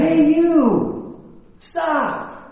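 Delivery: mock high-pitched shouted yell. Storyteller recounting the boy calling back to the voice: retelling a yell. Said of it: "the boy yells again".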